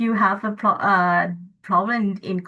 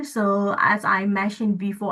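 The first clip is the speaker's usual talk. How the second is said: ordinary delivery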